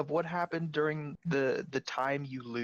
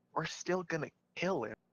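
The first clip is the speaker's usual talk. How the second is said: secretive, hushed half-whisper; 5 dB quieter than usual. Showing what they'd say so that he can't hear them, half-whispered. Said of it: "whisper so that he can't hear me".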